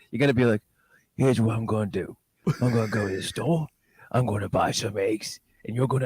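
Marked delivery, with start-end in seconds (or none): 1.1-6.0 super quiet, small-mouthed tough-guy voice. Speaker shows the listener how to imitate a man's voice: slightly baby tough guy voice. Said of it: "slightly baby tough guy voice".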